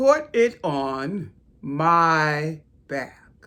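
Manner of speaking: very loud, deep booming voice, stretched "my". Narrator voicing the great turtle answering the animals, deep voice. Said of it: "came a deep, deep voice".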